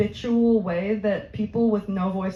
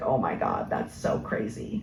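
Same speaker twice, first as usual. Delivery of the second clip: breathy, creaky vocal fry, low, popping; 14 semitones lower, 5 dB quieter than usual. Explaining vocal fry, imitating a suburban California girl, creaky vocal fry. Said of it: "Their voice is kind of popping down here while they're talking".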